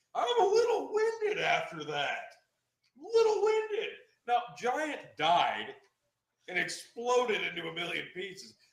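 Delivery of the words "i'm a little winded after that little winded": very high wrestler voice with swooping pitch. Retelling Braun Strowman flipping an ambulance: imitating Braun Strowman. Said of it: "Braun Strowman flips over an ambulance and goes".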